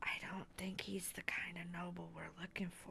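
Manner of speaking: very quiet whisper. In character, speaking privately to Neris; whispering. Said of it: "I'm just going to whisper to Neris".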